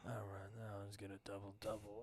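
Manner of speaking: very quiet, soft, beaten-down, defeated tone. Retelling a kid's answer after his order was refused: imitating a defeated tone. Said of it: "he just sounded so defeated".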